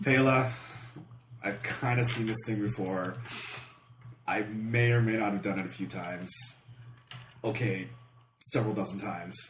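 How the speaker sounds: very quiet, resigned, been-here-before tone. A player speaking in character to Pela, in a resigned tone. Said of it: "I just have that resigned".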